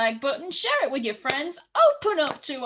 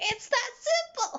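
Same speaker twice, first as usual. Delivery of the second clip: voice shooting up very high; 11 semitones higher, 4 dB quieter than usual. Wrapping up a video for viewers, with the voice going high. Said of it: "my voice went high for some reason".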